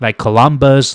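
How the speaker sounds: plain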